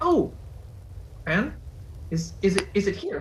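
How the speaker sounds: thrilled, overeager, very excited, words tripping out. Planning a role-play scene, acting out how she will react, very excited. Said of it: "She'll she'll get very excited".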